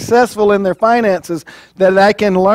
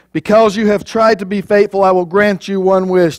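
ordinary talk

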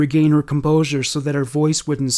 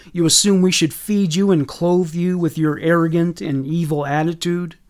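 ordinary delivery, nothing marked

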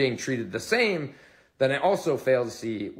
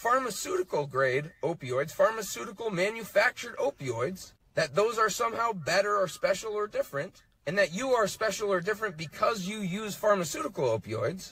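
furious, heated, pitched-up, very angry lecturing; 6 semitones higher than usual. In a played clip, a person addresses people who use pharmaceutical opioids, very angry tone. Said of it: "In a very angry tone".

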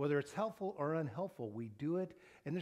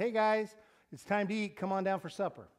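play-acted very courteous, friendly tone, voice raised; 4 semitones higher, 5 dB louder than usual. A dad retelling calling his kids down for supper, in a very nice, polite voice. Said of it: "in a very nice, polite voice says".

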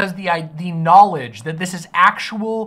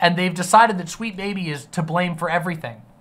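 ordinary talk, nothing marked

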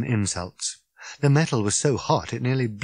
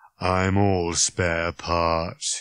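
low, flat, dead-level droning monotone; 6 semitones lower than usual. Narrator reading a novel voices the robot's reply in Marvin's droning voice. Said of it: "he droned".

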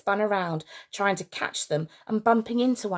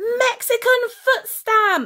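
very high, loud, thrilled, gleeful scream; 7 dB louder than usual. Narrator reading Grenville as kids stamp on a terrible's foot: screaming, in his element. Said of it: "screamed Grenville in his element".

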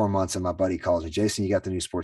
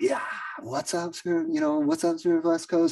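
put-on very high, hyped, amped-up shout; 9 semitones higher than usual. Retelling the moment the manager handed over the microphone: retelling a yell. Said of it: "And I just yelled".

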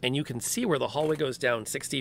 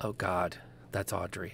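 soft, hushed whisper; 6 semitones lower, 8 dB quieter than usual. Voicing a companion who warns the players about a figure: Valentina whispering. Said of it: "Valentina whispers to you".

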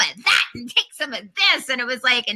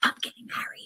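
put-on whisper, much quieter. Retelling what a woman said on first meeting, imitating her whisper. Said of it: "she kind of whispered".

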